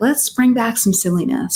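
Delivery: normal talking voice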